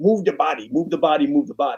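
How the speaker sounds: put-on Iranian accent, very broken and funny. Quoting a man from a great Iranian wrestling family: very broken, funny accent. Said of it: "with this very broken, funny accent".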